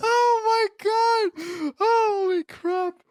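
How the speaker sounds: talking through laughter, pitched way up. Talking about a movie scene, laughing while talking. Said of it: "I can't stop laughing".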